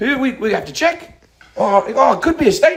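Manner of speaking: put-on New Zealand accent. Voicing New Zealand as a hesitant person: put-on New Zealand accent. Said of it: "I don't know how to do it in that accent".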